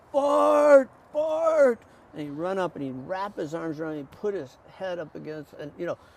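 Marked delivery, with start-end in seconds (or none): 0.1-1.8 very loud, very high, drawn-out stretched calling. Recalling a grown man running up after the sermon, retelling a loud call. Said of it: "he'd call my name out in a loud voice".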